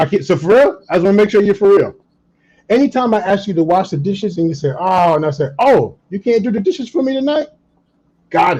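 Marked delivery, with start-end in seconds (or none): 5.6-7.5 teasing, playful, pitched-up delivery. Demonstrating a reply when asked to wash the dishes, in a playful tone. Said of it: "notice my voice was playful".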